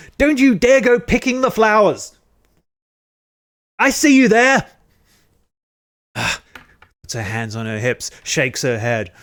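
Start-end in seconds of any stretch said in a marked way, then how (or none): 0.2-4.7 shrieking, shrill, very loud, angry scolding shout. Narrating a woman on her front steps telling off the kids, angry scolding. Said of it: "She waves her fist, shakes at them".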